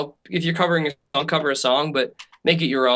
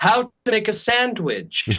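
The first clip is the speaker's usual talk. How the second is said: put-on, forced English accent, laid on and drawn out; 8 semitones higher than usual. Acting out the imagined host walking into the scene, forced English accent. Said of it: "why the sort of forced English accent there?".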